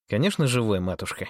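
plain reading voice

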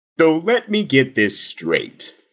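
high sing-song put-on voice. Doing the whole statement as George Takei: George Takei impression. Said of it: "Why don't I do the whole thing as George Takei?".

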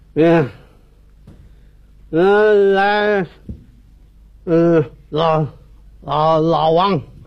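put-on slurred drunk speech.

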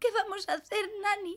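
tearful, crying voice. A girl speaking to nani about their mother, crying. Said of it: "No llores".

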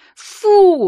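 shrill, very high squeal or shriek. The narrator, licked in the face and fending him off, shrieking. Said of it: "заверещала я".

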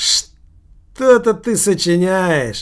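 dry, wry, smirking teasing tone. A narrator voices Sergei Sergeyevich answering a drunkard's story, smirking. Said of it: "усмехаясь".

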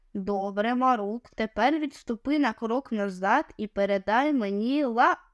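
plain

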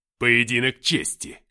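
very loud, snarling growl. Narrator reads a character answering a taunt, growling. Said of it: "прорычал он".

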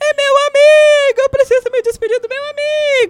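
imitated drunk yelling. Telling a burial story, speaker acts out a stumbling drunk coming downhill: retelling a drunk's shout. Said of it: "e gritando assim".

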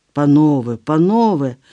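crying out, exclaiming. A prince parts two quarreling rivals with his hands, exclaiming. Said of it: "вигукнув князь".

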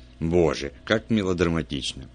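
ordinary delivery

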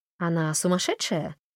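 ordinary delivery

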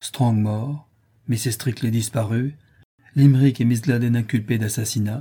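ordinary delivery, nothing marked

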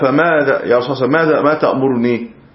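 ordinary talk, nothing marked

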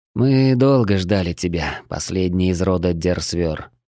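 ordinary delivery

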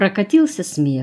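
ordinary delivery, nothing marked

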